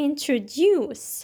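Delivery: introduce, weight on final syllable duce. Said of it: "pronounced with a stress at the end, so it sounds like this".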